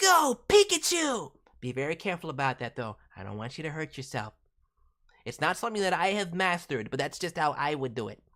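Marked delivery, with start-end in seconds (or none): 0.0-1.3 raspy, very high-pitched cry. Showing how to do the voice, with rasp and raised volume: Ash Ketchum voice. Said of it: "the Ass Ketchum voice kinda starts here".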